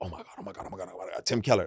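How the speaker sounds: fast, breathy, nervous, panicked gushing. Retelling meeting a hero at a dinner: imitating own nervous freakout. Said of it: "nervous like a".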